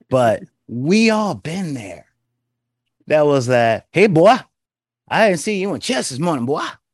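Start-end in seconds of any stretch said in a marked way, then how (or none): 3.9-6.6 quick, pitched-up voice of forty-plus Southern man. Retelling a talk about Sauron, the speaker imitates a 40-plus-year-old man. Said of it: "reminded me of every 40 plus year old man".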